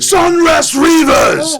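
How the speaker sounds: shouting half-orc voice. Voicing a half-orc gripping a barrier and calling out: half-orc yelling. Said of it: "And he yells".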